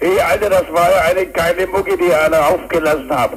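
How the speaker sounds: put-on high-pitched Kiel accent. Reproducing the literal tone of something a local said, imitating a Kiel local. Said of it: "Ich gebe am besten den wörtlichen Ton wieder, den zum Beispiel ein Kieler von sich gegeben hat. Das klingt dann so".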